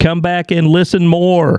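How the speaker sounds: talking very loudly. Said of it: "it sounds like you're talking to somebody when you find out they're deaf".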